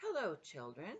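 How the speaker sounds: sweet, sugary voice. Miss Nelson speaks to the children, in a sweet voice. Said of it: "someone said in a sweet voice".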